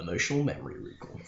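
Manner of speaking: low, grand, epic movie-trailer voice. Repeating the week's topic name as a joke: epic movie voice. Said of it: "In the epic movie voice".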